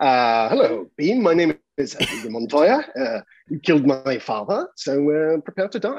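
posh, royal-sounding upper-class British accent. Trying out accents on request, saying a line in a posh British accent. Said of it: "like posh British".

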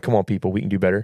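plain

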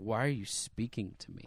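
put-on hateful, hostile snapping. Retelling snapping at people at work, imitating own past hostility. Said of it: "look at them with, like, this just, like, hatred".

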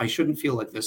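normal talking voice

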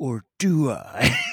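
monster-like put-on demon voice. Retelling a scene where a demon in a magazine picture talks, demon voice. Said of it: "with his demon voice".

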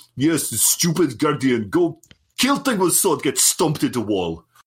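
put-on thick, blunt Russian accent. Joking about how Rasputin would talk, in a thick Russian voice. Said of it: "in that really like thick Russian voice".

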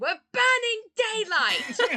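high-pitched, ringing, loud yell. Voicing Suri as she yells again at the party; Suri yelling. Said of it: "Suri yells again".

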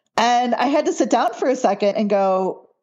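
normal talking voice

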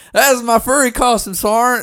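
put-on horrible high Texas accent. Retelling what a guy said about his furry costume, imitating John's Texas accent. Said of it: "he was from Texas. Horrible accent".

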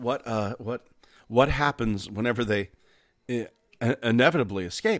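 slow delivery, stumbling over the word "what". Joking about a trilobite park as a visitor asks: Jeff Goldblum impression. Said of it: "fucking Jeff Goldblum comes in".

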